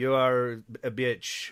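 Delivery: slow, low mock Spanish accent. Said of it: "your Spanish accent".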